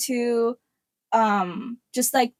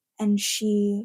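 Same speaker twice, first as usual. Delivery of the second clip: mock male audiobook narrator voice, lower; 3 semitones lower, 4 dB quieter than usual. Mocking audiobooks, reading a line as a grown man narrator: mock grown man audiobook narrator. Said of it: "a grown man in my voice being like".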